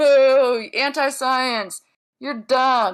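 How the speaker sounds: mocking crowd jeering, loud, slowed boo.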